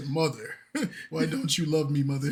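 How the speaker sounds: naturally deep, low voice. Quoting a man who asks his mother why she doesn't love him: imitating his deep voice. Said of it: "he has a naturally deep voice, so he said".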